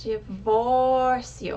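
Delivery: stress on vór in divórcio. Teaching the pronunciation of divórcio: stress on vor in divórcio. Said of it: "The O in the middle of that word has the accent and it's pronounced higher".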